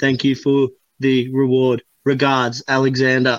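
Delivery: monotone, flat, robotic, scripted read-off. Retelling a man reading his email aloud off his phone, like a robot. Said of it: "he read it like a robot".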